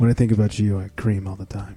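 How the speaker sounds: put-on seductive voice. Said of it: "'Cause my sexy voice".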